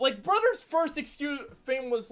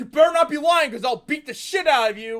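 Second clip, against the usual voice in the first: sudden, loud, abrupt, menacing tone; 4 semitones higher, 7 dB louder than usual. Retelling a cartoon character's sudden threat: imitating Trent threatening. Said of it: "out of goddamn nowhere is like".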